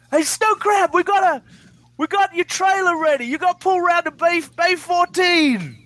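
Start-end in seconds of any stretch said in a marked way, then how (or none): 0.1-3.2 put-on shout, much higher pitch. Retelling how a man calls to you from the lot's far end, retelling a shout across a lot. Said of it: "Shouting at you from the other end".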